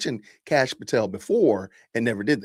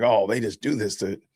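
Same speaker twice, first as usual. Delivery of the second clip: mocking flippant delivery, lower pitch; 5 semitones lower than usual. Mocking a woman who spoke of something nasty: imitating a flippant tone. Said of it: "so flippant about something so".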